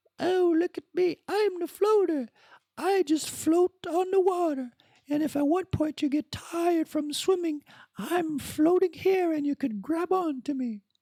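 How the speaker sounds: very high, little talking pool float voice. Telling a beach story, imagining what a pool floater would say: talking pool float voice. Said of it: "if a floater had a voice".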